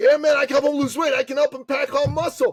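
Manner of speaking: eager boastful tone, pitched high and loud.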